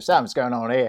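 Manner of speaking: put-on Australian accent. Repeating a quoted line to the others, in an Australian accent. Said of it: "You've got to really say it with an Australian accent".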